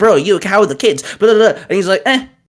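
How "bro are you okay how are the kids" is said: anxious, panicked, urgent and worried tone. Speaker retells messaging someone whose area keeps getting tornadoes: retelling own panicked message. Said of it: "I'm panicking".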